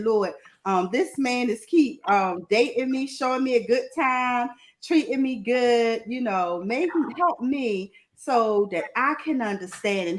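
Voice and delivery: ordinary talk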